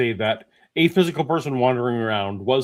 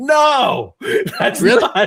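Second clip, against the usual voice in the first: loud, very high swooping yell, "no" drawn out; 13 semitones higher, 7 dB louder than usual. Retelling reacting aloud to apologists while walking the dog: imitating own yelling. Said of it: "I'm yelling like".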